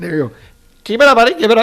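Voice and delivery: put-on quick, high old man voice.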